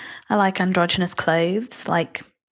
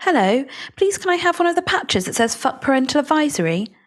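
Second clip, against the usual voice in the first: put-on sweet, high, innocent little-kid voice, polite; 8 semitones higher than usual. Retelling asking the man behind a shop counter for a patch: sweet, unassuming high voice. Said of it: "in my sweet, unassuming high voice".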